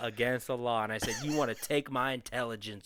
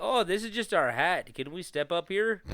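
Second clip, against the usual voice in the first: put-on slow, friendly Canadian accent, pitched up; 7 semitones higher, 3 dB louder than usual. Imitating American agents asking to step up: Canadian accent. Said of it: "I don't know why I gave them a Canadian accent again".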